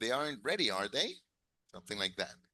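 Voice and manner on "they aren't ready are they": pitch rising upward on "are they". Practicing a tag question: rising pitch on are they. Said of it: "It's a question, so your intonation has to be a little high".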